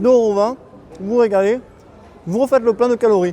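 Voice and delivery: talking with mouth full. Filming a travel vlog while eating, talking with mouth full. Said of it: "je pars la bouche pleine".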